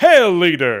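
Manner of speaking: loud, belted, overjoyed, thrilled delivery. Voice actor redoing a line from his Hierophant role, super happy Hierophant. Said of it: "he's super happy to be there".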